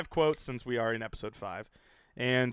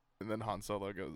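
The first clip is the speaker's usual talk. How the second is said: normal talking voice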